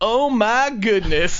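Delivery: Texan southern twang, exclaimed. Retell what your friend from texas said as girls walked by, in a put-on southern twang. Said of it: "in this southern twang".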